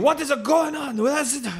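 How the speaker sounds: shouted high, slipping into Italian. Acting out a skit where Miyamoto runs in: Miyamoto voice accidentally sounding Italian. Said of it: "that sounds like an Italian".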